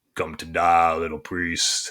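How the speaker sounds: low, guttural voice from the throat. Describing a TV villain heard in the distance, the speaker quotes him: really guttural voice. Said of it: "it's like just really like guttural".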